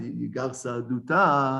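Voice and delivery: plain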